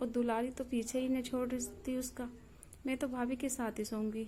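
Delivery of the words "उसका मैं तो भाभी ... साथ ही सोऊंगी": ordinary delivery, nothing marked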